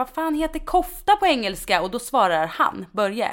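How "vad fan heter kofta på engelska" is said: shrill, very high-pitched blurted cry. Retelling calling out to a patient about a cardigan: retelling a shout. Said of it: "skriker jag så här bara rakt ut i luften".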